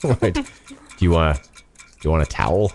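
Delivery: clumsy, overly polite, awkward, fumbling flirtatious tone. Doing a joke bit of dirty talk on the podcast: mock awkward dirty talk. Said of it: "thirty seconds awkward, uh, dirty talk".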